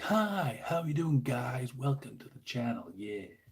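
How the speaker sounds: proper cheesy over-the-top American, swooping sing-song. Demonstrating a more enthusiastic channel greeting, over-the-top cheesy american. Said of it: "proper cheesy, almost like over the top American".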